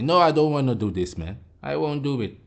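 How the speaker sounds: ordinary delivery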